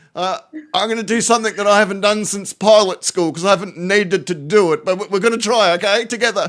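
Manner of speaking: mock panicky pilot announcement. Retelling a true story of what a pilot said; imitating a panicking pilot. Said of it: "It sounds like panic".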